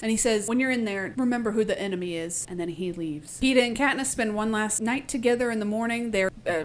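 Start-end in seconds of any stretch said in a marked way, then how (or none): none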